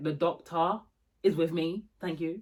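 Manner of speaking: plain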